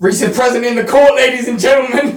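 mock announcer voice, announcing style.

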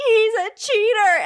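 shrill, very loud, very high shouted yell. Retelling storming off in the high school lunchroom, re-enacting a yell. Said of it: "and like yell in my high school lunchroom".

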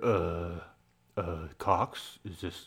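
low, very slow, halting, stammering voice. Retelling a scene where the caller freezes on the phone: imitating Brad Pitt's weird voice. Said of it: "goes into this weird voice".

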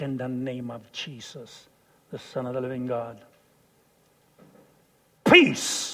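forceful, righteous, angry, commanding tone. Retelling commanding the storm to stop: retelling an angry command. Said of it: "I was so angry that I said".

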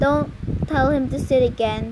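ordinary delivery

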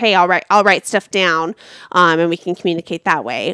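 normal talking voice

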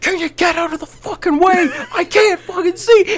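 sudden, all-out, full-force acted screaming. Retelling a man standing up at his open door to scream: imitating someone screaming. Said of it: "stands up and just screams".

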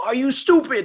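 put-on British celebrity-chef accent, pitched high. Reading a quote in a did-he-say-it game, Gordon Ramsay impression. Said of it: "I need your inner Ramsey to come out".

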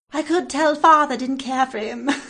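put-on old-fashioned Victorian ghost child voice. Imitating a woman who kept saying father, like a ghost victorian child. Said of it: "like a ghost of Victorian child?".

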